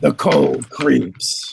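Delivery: hoarse, rasping voice. Voicing a figure speaking from behind his visor, raspy voice. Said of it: "you hear you know the a raspy voice".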